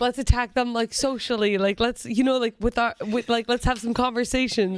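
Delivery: ordinary delivery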